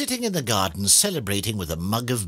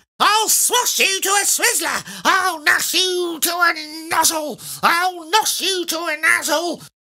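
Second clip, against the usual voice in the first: very high-pitched, loud, shrill, furious yell; 6 dB louder than usual. She comes down on mr. twit, slashing with her walking stick, shouting. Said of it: "she shouted".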